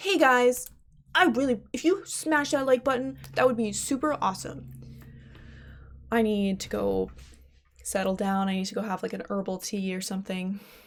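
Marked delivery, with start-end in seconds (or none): 0.0-4.7 over-eager, hyped video-host patter. Thanking viewers for watching, then slipping into a YouTuber voice. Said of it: "That sounded like YouTuber voice".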